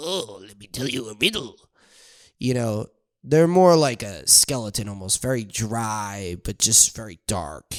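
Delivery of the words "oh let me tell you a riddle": soft fairy-tale troll character voice. Describing how a troll character would sound, demonstrating a troll voice. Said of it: "the troll would be like".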